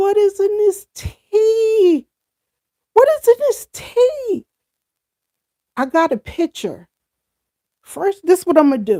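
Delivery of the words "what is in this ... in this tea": mock high crying-laughing voice, tea drawn out. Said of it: "And I'm crying, laughing".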